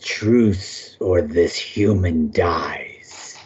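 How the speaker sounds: deep, low, throaty, guttural goblin snarl. Narrating the game, the goblin speaks to Finn in a guttural low growl. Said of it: "in a guttural, low growl".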